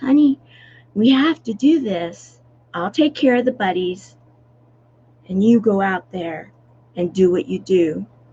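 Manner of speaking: mock, very sweet, honey-sweet motherly tone. Speaker retells what their mom always told them, imitating mom's very sweet voice. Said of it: "this is a very sweet voice".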